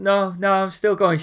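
put-on slurred speech. Retelling a woman's reply to a man chatting to her, imitating slurred speech. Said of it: "She's slurring a little bit".

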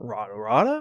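put-on cartoon character voice. Talking about Chowder, saying rata rata in Schnitzel voice. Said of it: "when I'm doing my Schnitzel voice".

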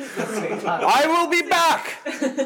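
boisterous, very high, slow, drawn-out voice. Retelling a nemesis's parting line before flying away, put-on boisterous voice. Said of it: "He says in his boisterous voice".

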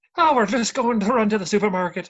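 light, lilting Irish accent. Trying out irish accents with others in a group: floaty, uplifting irish accent. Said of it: "it's floaty, it's uplifting".

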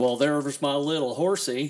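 put-on cowboy drawl. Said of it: "when I do my John Wayne impersonation".

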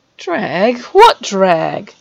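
indignant, affronted, offended voice. A boy reacts to his brother suggesting he dragged someone along: affronted. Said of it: "Fred asked, affronted".

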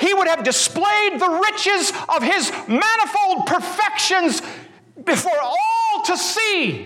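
very high-pitched, shrill, full yell. Trying to emulate his voice for your listeners, perform this yelling in a Jerry Walls voice. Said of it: "yell in my Jerry Walls voice".

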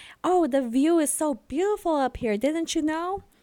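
put-on sweetness, false cheer. Retelling a scene where a character covers up with a fake smile: imitating a fake cheerful tone. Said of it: "puts on a fake ass smile and he's like".

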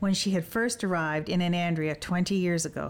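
ordinary delivery

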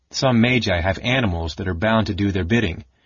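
ordinary talk

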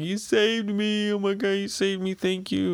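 crying, tearful, very high-pitched voice. Retelling a scene where Anne saves Luffy from the water, Luffy crying with put-on thanks. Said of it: "he's all thankful, crying".

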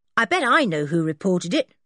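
ordinary delivery

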